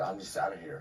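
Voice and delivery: ordinary talk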